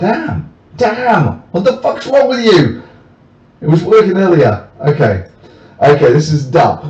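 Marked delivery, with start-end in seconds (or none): 0.0-2.8 shouted man's voice, pitched way up. Overdubbing a silent video of a man at an election protest: imitating a man shouting. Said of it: "I gave you my best overdub of that".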